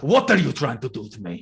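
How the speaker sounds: restrained put-on shouting. Voicing a character looming over another, shouting but not fully. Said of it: "he's, like, full on shouting at you".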